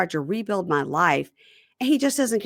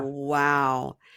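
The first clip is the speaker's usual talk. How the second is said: put-on smug, smirking tone, lower pitch; 5 semitones lower than usual. Retelling how she answered him with a smirk: imitating a smirking wow. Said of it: "she just looks at him with a smirk like".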